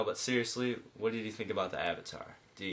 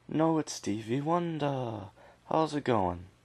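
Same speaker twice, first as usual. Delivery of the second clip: put-on British accent, higher pitched; 5 semitones higher, 4 dB louder than usual. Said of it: "I gave [name] a British accent".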